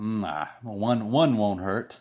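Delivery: slow voice full of craving and longing. Retelling being tempted by a soda, imitating a tempted alcoholic. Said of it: "like an alcoholic looking at something like".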